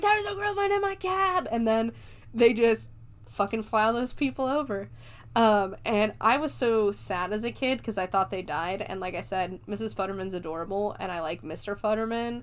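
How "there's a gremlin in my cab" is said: very high, play-acted panicked screaming. Recounting a scene, the speaker acts out the snowplow driver: retelling a scream. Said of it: "he just starts screaming".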